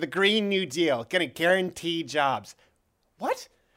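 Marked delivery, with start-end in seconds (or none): 0.0-2.6 deliberate, slow, drawn-out politician voice, soundbite-style delivery. Quoting AOC about the Green New Deal: AOC impression. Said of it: "She said".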